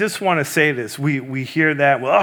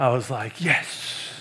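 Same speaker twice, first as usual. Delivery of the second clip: plain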